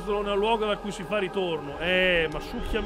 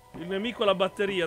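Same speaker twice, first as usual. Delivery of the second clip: ordinary talk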